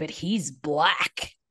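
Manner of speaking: play-acted judgy, negative, disapproving kid tone. Retelling how kids at school asked about a dad: imitating kids' negative tone. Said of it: "saying it with a tone that was negative".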